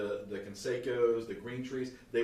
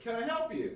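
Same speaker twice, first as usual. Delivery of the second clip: put-on nice Southern accent, pitched high; 11 semitones higher than usual. Retelling a lady at her desk asking if she can help, in a nice Southern accent. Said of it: "Very nice Southern".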